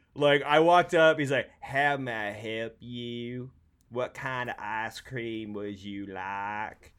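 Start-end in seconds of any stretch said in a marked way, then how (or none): 1.6-6.7 drawn-out, slow Southern speech. Retelling an ice cream server's words in a Droopy Dog drawl. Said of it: "literally had the droopy dog".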